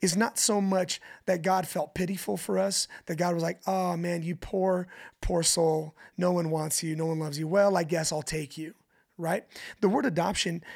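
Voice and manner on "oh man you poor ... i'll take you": plain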